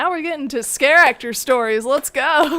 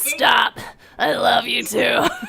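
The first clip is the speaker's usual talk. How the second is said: put-on guttural voice like a lifelong smoker; 3 semitones lower than usual. Showing off a voice from the Beetlejuice musical, guttural like an old smoker. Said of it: "woman who's been smoking ninety years".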